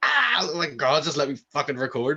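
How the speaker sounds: high, fed-up, yelped screaming outburst. Retelling recording when stopped mid-take, imitating his own screaming. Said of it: "I'm screaming into the mic".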